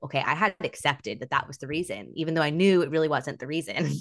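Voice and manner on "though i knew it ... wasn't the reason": ordinary talk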